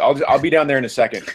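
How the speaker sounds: ordinary delivery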